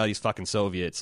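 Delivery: normal talking voice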